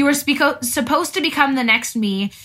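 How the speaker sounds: ordinary talk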